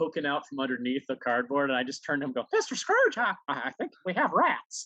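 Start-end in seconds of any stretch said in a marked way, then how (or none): 2.5-4.9 high squeaky voice, slow and swooping. Retelling hiding under cardboard, turning to him and speaking in a Mickey Mouse voice. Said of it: "you do a great Mickey Mouse voice".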